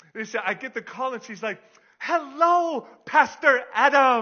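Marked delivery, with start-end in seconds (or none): 2.0-4.3 high, loud, bubbly voice. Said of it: "this woman is the most bubbly".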